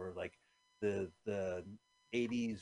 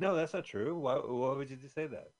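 acted defensive tone, higher; 4 semitones higher, 3 dB louder than usual. Acting out a daughter answering her mother: imitating a defensive denial. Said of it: "defensively saying".

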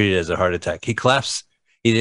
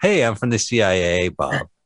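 put-on drawling voice. Retelling a CIA man introducing himself to Bob, imitating a drawl. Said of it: "He has this great like draw".

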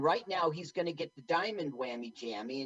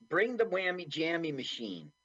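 usual speaking voice

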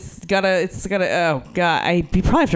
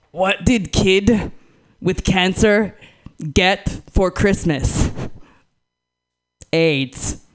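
put-on primitive cave person voice. Telling a favorite joke, not their own, in primitive cave person voice. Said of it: "I am going to do one of my favorite jokes in primitive cave voice".

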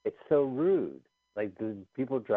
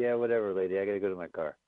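plain

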